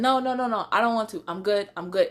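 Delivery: put-on fast, panicked hyperventilating breathing. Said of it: "I'm still hyperventilating".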